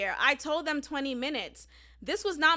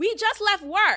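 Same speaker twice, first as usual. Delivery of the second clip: emphatic, punched exclamation-point delivery; 4 semitones higher, 4 dB louder than usual. Retelling a coworker's text message that ended in an exclamation point: imitating an exclamatory text. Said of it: "the reason why I'm saying it like that".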